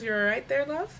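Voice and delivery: amused little chuckle. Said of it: "looks at you and she chuckles a little bit".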